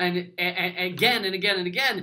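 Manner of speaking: plain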